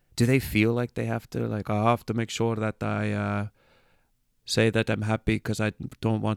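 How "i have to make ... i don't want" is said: best attempt at a put-on Danish accent. Wondering about Danish happiness surveys, voicing a Danish respondent in a put-on Danish accent. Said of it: "that's my best Danish accent".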